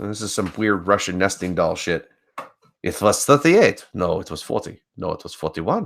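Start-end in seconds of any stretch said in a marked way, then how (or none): 2.8-5.9 fake German accent, heavily played up. Reading out conflicting death tolls as a joke: put-on german accent. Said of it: "why do I sound like a German?".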